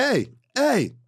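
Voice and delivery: voices calling out, high and loud.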